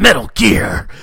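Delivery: very loud, booming, echoing video-game soldier voice. Describing a game's running joke, the speaker does his Solid Snake voice. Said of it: "his Solid Snake voice".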